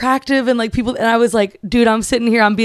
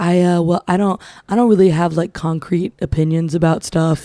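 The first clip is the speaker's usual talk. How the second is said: mock whisper, pitched lower; 5 semitones lower than usual. Imitating a guy's dating-app voice memo: imitating a guy whispering. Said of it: "also whispering".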